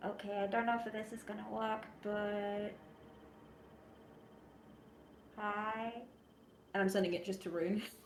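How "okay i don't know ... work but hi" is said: slow, unhurried, hushed whisper. Player whispering a message through a copper wire to another character, whispering. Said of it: "I'm just gonna like whisper into it".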